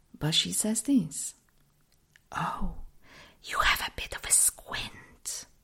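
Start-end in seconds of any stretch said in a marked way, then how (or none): 2.3-5.5 slow, hushed, confidential whisper. Retelling what the optometrist told them: imitating someone whispering. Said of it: "she actually whispers it to me".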